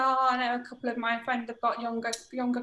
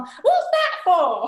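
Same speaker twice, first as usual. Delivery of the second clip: put-on blurted very loud and high, like a child; 6 semitones higher, 10 dB louder than usual. Retelling how young children ask about the speaker's cane, in a very loud voice. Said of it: "in a very loud voice".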